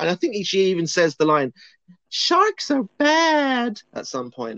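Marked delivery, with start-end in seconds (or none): 2.1-3.8 very high whine, badly stretched out. Describing a film character, the speaker mimics her line in a put-on whiny voice. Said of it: "like in this whiny voice".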